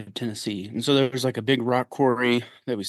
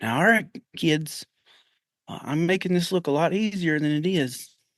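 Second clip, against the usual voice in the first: put-on heavy Southern accent laid on thick, pitched up; 6 semitones higher than usual. Retelling what the high school art teacher told the kids: imitating Mister Hickey's thick Southern accent. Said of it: "really thick Southern accent".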